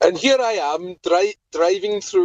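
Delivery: put-on Welsh accent, stumbling over the word driving. Speaker narrating their own driving for listeners, welsh accent. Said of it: "in a Welsh accent if it makes you feel better".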